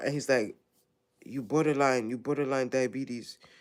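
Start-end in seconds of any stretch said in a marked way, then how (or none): 1.2-3.4 imitated, put-on Ghanaian accent. Retelling what the doctor said about the labs: imitating a Ghanaian accent. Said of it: "Ghanaian, that's how they talk".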